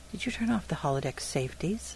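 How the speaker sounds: distrustful, wary, suspicious. A woman questions a Romulan who lets her walk his ship freely, suspicious. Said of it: "She narrowed her eyes and said suspiciously".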